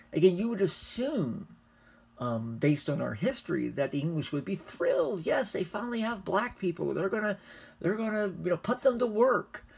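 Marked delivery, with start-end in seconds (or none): 5.2-9.6 high, sarcastic mock enthusiasm. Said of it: "I'm being a little sarcastic there".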